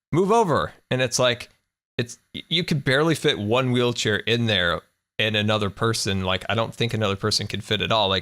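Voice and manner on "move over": high-pitched yelling. Retelling a lady pushing a wheelchair in the elevator: imitating someone yelling.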